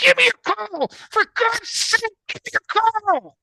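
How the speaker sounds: very high, shrill, loud screaming. Telling a story, the speaker acts out a man screaming at a woman: retelling a scream. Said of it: "he screams at the woman".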